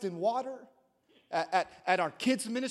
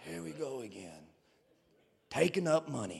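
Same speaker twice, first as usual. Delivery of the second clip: put-on Southern Alabama accent, very low-pitched; 9 semitones lower, 4 dB quieter than usual. Voicing what people mutter when the offering is taken, in a southern alabama accent. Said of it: "I don't know why I sounded like I was from, like, Alabama".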